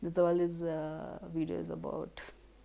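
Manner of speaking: soft, giggling, laughing while talking.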